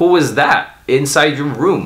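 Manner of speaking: ordinary talk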